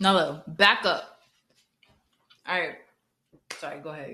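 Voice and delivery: speaking with mouth full. Chatting with another speaker after a first bite of empanada, chewing while talking. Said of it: "'cause I'm chewing".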